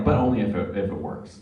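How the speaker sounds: ordinary talk, nothing marked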